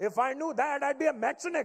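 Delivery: put-on heavy Indian accent. Retelling your dad's call about his broken-down car, imitating dad's thick Indian accent. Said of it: "how thick my dad's Indian accent was".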